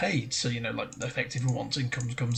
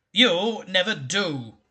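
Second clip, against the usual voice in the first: severe, stern, reproving tone, loud and raised; 6 semitones higher, 5 dB louder than usual. A voice answers another character's excuse, in a stern voice. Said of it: "said a stern voice".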